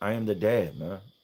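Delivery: plain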